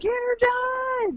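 put-on very high yell, word done drawn out. Retelling cheering from the background at a wedding: imitating own screaming. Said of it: "you can hear me in the background screaming".

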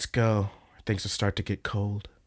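acted, really saucy, flirtatious tone. Retelling an anime scene where a character pulls him away: imitating a saucy tone. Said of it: "really, really saucy".

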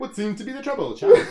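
put-on very high, very loud, shrill British accent. Retelling someone bursting into the office, quoted in a British accent. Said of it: "they got British accents".

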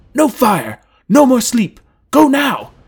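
very high, loud, shrill, drawn-out commanding yell. He yells out commands as he rushes toward the northern road: yelled. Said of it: "he yelled".

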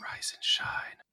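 soft, close, hushed whisper. Waking a sleeping party member for watch: whispering in someone's ear. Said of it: "I'll just lean over and whisper in his ear".

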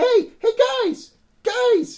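put-on squeaky cartoon kid voice. Narrator voicing the punched child running out after the group, high squeaky cartoon kid voice. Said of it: "Why do you sound like Mickey Mouse?".

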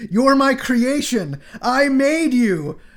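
high-pitched, slow and loud shout. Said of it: "he shouts".

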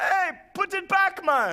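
very high, slow, drawn-out put-on Jamaican accent. Retelling what a man on the roof said: jamaican accent. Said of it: "I don't know why it sounded Jamaican".

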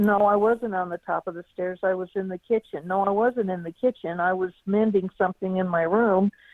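ordinary talk, nothing marked

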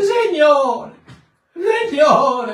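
acted-out tearful wailing, very high. Mocking a church sister who starts crying at prayer time, imitating her wailing. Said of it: "c'è sempre la sorella che si mette a piangere".

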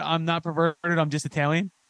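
ordinary delivery

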